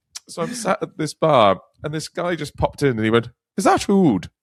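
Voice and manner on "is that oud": broad, thick put-on Irish accent, pitched up. Retelling how a stranger at a bar asked about a scent: thick irish accent. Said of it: "a thick Irish nondescript accent".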